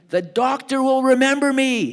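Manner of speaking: very high, very loud, shrill, drawn-out shriek. Retelling how a man on the dock screamed at the boat: imitating someone screaming. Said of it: "he starts screaming".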